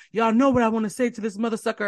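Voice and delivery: play-acted weepy, tearful, high crying voice. Retelling how someone on Twitch got mad and cried: imitating Academics crying. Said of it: "He starts crying".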